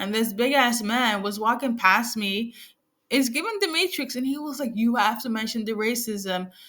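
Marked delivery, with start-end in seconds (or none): none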